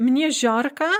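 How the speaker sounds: ordinary delivery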